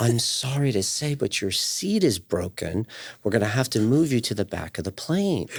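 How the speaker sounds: gentle, pleasant, nice, soft airline-staff voice. Recounting what the people at the front of the plane told the speaker, nice soft voice. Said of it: "in a really nice, soft voice".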